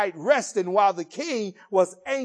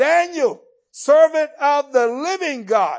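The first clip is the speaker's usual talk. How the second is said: loud, high, ringing cry; 6 semitones higher, 7 dB louder than usual. Retelling the story, the king cries out to daniel: retelling a loud cry. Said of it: "the king cries out in a loud voice".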